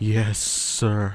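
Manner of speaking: mock-defeated, dejected put-on voice. Repeating a police officer's reply after mocking it: mimicking a defeated officer. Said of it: "That sounded like the most defeated police officer ever".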